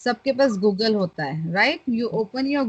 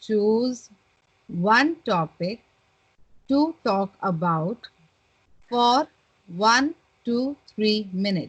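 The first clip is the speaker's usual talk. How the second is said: overly slow, halting, broken-up reading aloud. Showing how not to read the on-screen prompt aloud, reading too slowly. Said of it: "Don't read so slowly".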